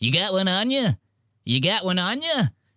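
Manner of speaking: squeaky, high little voice. Mocking another speaker asking for a nicotine pouch: imitating Mark's squeaky voice. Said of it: "I hate Mark's voice".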